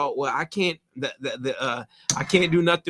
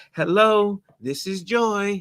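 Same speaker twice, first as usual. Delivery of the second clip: sugary sweet, very slow voice; 3 semitones higher than usual. Imitating Joy answering the phone: imitating Joy's sweet phone voice. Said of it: "She answered the phone so sweet".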